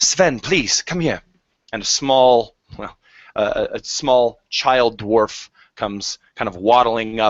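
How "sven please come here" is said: put-on Queen's English accent. Narrating a role-play scene, voicing a woman who speaks the Queen's English. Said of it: "you are speaking the Queen's English".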